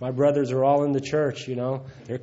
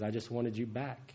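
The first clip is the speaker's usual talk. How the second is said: mock tearful crying, much quieter; 3 semitones lower, 12 dB quieter than usual. Retelling what a woman said as he made amends, imitating her crying. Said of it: "she started crying again".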